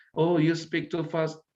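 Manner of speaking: plain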